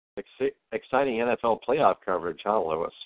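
normal talking voice

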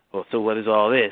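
put-on sarcastic tone. Retelling how he looked into the folder: imitating someone being sarcastic. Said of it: "he start getting real sarcastic and saying".

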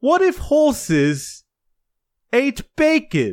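odd, put-on, swooping British accent. Voicing someone's doubt as it speaks up, weird British voice. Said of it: "this weird British voice that says".

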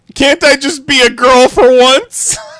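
shrieking through tears, very loud and very high. Retelling a partner's reaction to an engagement ring idea: imitating Mary's tearful scream. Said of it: "broke down in tears and screamed".

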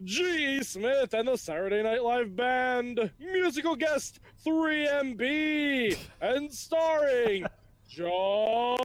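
put-on announcer voice. Doing a show intro in the style of a late-night sketch show: Jimmy Pardo impression. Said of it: "I can do a Jimmy Pardo impression".

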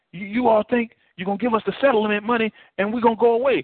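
real, passionate, emotional high woman's voice. Retelling a lady who came up asking about a missing flight, imitating an emotional woman. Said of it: "She was real emotional".

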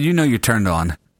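ordinary delivery

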